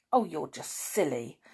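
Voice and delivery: in disgust. Reading a boy's reply in an argument about freckles, in disgust. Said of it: "said Dick in disgust".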